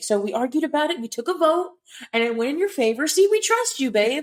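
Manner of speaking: sweet, totally innocent delivery. Retelling how a character breaks news to her: imitating Rhys saying it innocently. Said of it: "he says it so innocently".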